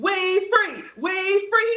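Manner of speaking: put-on very high, drawn-out, elated, celebratory screaming.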